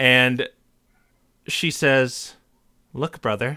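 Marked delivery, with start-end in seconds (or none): 2.9-3.6 very flat, soft deadpan with a hint of coyness. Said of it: "speaks with this very deadpan, with a slight tinge of coyness in her voice".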